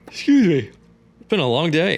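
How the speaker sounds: high, loud speech yawned through the words.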